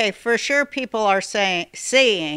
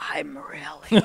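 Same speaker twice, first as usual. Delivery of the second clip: low, hushed whispering; 5 semitones lower, 4 dB quieter than usual. Retelling what she said on the phone: imitating someone whispering. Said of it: "She's whispering on the phone".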